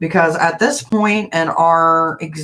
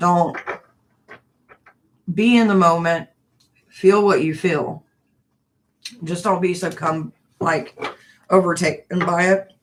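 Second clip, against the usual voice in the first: speaking through hiccups. Speaker talking to viewers, hiccuping while speaking. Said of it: "Sorry, I'm hiccuping".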